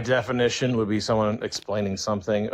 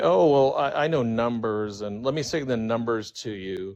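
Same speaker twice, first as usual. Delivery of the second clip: plain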